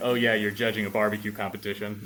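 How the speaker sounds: plain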